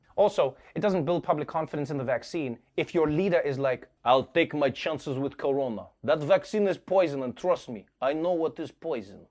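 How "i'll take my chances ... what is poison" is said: fake, put-on Russian accent. Acting out a leader's words, in a put-on Russian accent. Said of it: "(Russian accent)".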